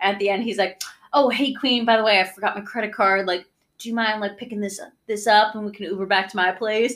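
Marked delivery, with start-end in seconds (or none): 1.1-7.0 sleazy, smarmy patter voice. Retelling a TikTok of a guy on a pseudo date: imitating a sleazy guy on a date. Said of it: "saying all the shitty things that, like, really shitty guys say".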